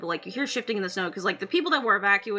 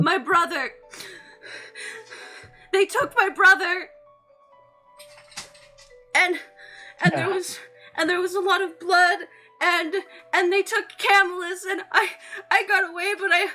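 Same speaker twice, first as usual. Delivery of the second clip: panicked sobbing, heavy breathing, higher and louder; 11 semitones higher, 4 dB louder than usual. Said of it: "breathing very heavily".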